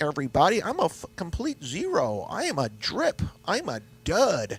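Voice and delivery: plain Minnesotan way of talking. Introducing the character April to everybody, in a Fargo-style Minnesota accent. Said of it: "I got a Minnesota accent. I talk like I'm on Fargo".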